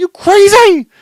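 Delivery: very loud, very high-pitched scream. Retelling how they screamed back at a man screaming at them, retelling a scream. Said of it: "I'm screaming that to him".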